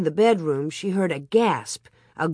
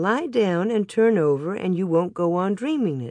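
ordinary delivery

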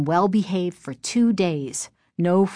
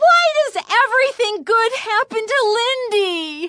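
very high, shrill, angry screamed outburst. After another girl runs from the room, a girl screaming aloud. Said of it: "Chris screamed aloud".

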